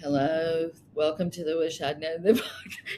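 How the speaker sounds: put-on depressed tone. Imitating her own past podcast greeting after her sister died: imitating her own depressed voice. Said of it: "I'm so depressed. You can hear it in my voice".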